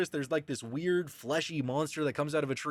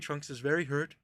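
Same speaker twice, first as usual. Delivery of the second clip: ordinary talk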